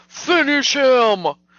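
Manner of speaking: loud, slow, mock arcade announcer scream. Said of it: "wanted somebody to scream".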